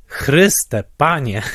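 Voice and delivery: put-on half-frightened, half-amused outburst. Retelling an audience member's outburst in a theater, half-scared, half-amused. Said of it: "powiedziała dokładnie takim głosem".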